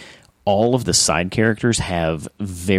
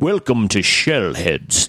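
put-on, proper British accent. Showing how you slip into it when greeting listeners: British accent. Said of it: "even I jump into a British".

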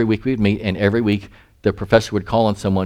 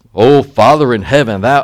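deep, booming, solemn intoning voice; 3 semitones higher, 8 dB louder than usual. Retelling how a student prayed aloud in class, imitating a deep booming voice. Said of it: "he had this deep voice".

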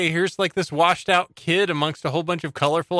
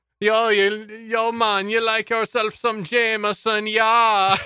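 put-on German Jamaican accent, much higher; 6 semitones higher than usual. Friends joking in silly accents while watching a movie, in a put-on German Jamaican accent. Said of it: "I like the German Jamaican that's going through there".

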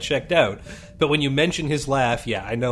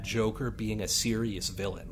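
ordinary talk

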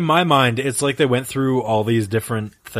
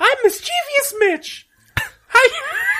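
very high-pitched, drawn-out put-on character voice. Playing a character named Mischievous Mitch: high voice. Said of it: "Why did you do such a high voice?".

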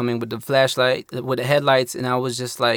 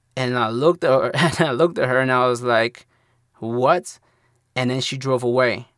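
ordinary talk, nothing marked

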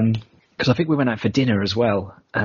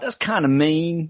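poor, put-on American accent attempt; 6 semitones higher than usual. Copying another speaker's line in a bad imitated american accent. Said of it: "Let me copy you".

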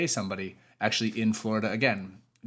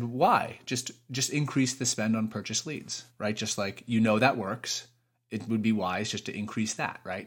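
normal talking voice

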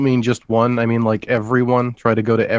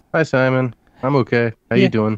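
fake downcast tone, pretending to sound low. Greeting the other speaker at the start of a live podcast, pretending to sound down. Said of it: "You sound a little down today".

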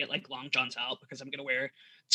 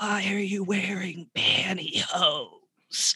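small, weak, feeble voice, high, very drawn out; 5 semitones higher than usual. Retelling hearing a partner speak from the dark: imitating a little weak voice. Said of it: "little weak voice in the darkness go".

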